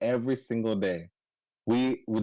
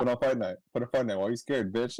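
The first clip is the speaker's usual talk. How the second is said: ordinary talk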